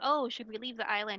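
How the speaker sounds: ordinary delivery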